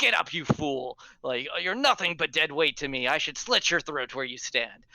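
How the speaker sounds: enraged pirate voice, bellowing. Voicing a pirate kicking a fallen drunk: pirate in a rage. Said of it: "in his rage, he's going to kick the drunk and be like".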